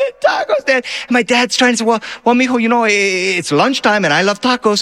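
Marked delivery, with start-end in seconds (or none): 0.0-0.8 mock sobbing in a much higher child-like voice. Retelling his brother's reaction at a taco stand, imitating Robert sobbing. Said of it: "he just starts sobbing".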